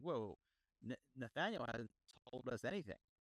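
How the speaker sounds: usual speaking voice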